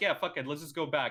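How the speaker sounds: ordinary delivery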